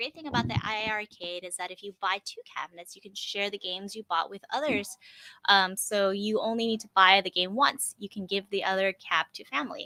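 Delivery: ordinary talk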